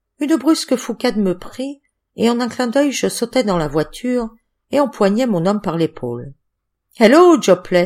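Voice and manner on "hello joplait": exclaiming, louder. Narrator reads the first-person hero grabbing a man by the shoulder in a car: exclaiming.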